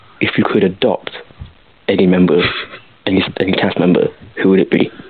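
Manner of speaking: ordinary talk, nothing marked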